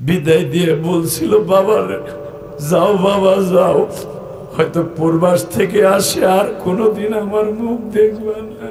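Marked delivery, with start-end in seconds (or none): none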